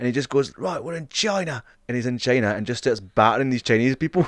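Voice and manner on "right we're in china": bad Australian accent, high, slow and drawn out. Retelling how he fights around the world, announce his arrival in a bad Russell Crowe Australian accent. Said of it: "He gave him this really shitty like Australian accent".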